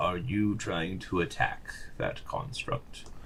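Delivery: low, deep, soft rumbling creature voice. Narrating a game scene, a creature speaks from behind the player, deep rumbling voice. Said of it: "a deep kind of rumbling voice behind you that says".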